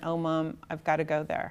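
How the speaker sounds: ordinary talk, nothing marked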